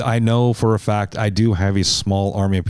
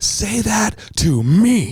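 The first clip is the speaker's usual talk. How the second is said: put-on scream, very high, very slow, drawn out; 12 semitones higher than usual. Retelling how a big man confronted another traveler: imitating someone screaming. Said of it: "he's screaming at this dude".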